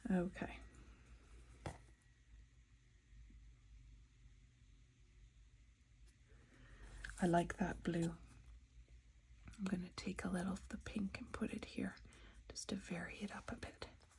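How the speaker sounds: very soft, concentrating hushed whisper. Painting and describing colour choices while concentrating: whispering. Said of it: "Why am I whispering?".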